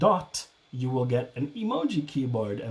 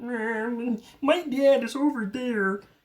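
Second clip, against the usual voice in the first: put-on frog puppet voice; 11 semitones higher than usual. Imitating Eric Trump at a rally: Eric Trump in a Kermit the Frog voice. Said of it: "I made him sound like Kermit the Frog".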